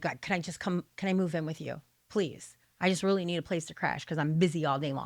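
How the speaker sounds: earnest, pleading, begging tone. Retelling begging a grandma to let them move in: retelling own begging. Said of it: "I finally begged my grandma".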